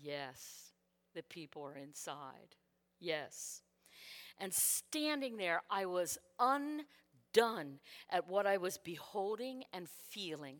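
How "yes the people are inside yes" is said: put-on very hushed, deep and serene tone. Retelling God's reply as the flames roar, in a peaceful, pleasant tone. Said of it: "saying the most peaceful and pleasant tone".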